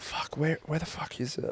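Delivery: mock muttering under the breath. Speaker acts out searching around a corner, mumbling under their breath. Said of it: "mumble under my breath".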